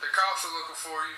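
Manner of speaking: plain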